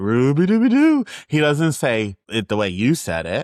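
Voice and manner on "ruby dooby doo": howling cartoon dog voice, higher and louder. Correct someone's impression by showing how the character howls his own name, in a howling Scooby-Doo voice. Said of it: "he howls it".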